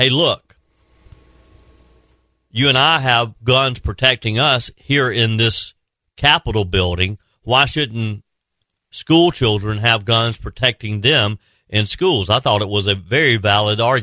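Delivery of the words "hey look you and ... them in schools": usual speaking voice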